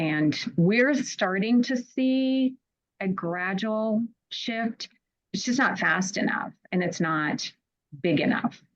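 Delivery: audibly exasperated, drawn-out see. Explaining a hard situation to other speakers, exasperated. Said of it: "I can hear the exasperation in your voice".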